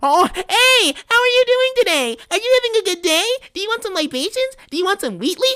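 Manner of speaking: very high-pitched, squeaky put-on gimmick voice. Complaining about performers who all share the same gimmick, imitating them: mocking high-pitched voice. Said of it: "really high-pitched voices like you're Harley Quinn".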